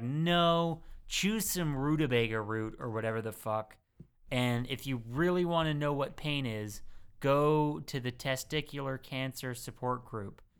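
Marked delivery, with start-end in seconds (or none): none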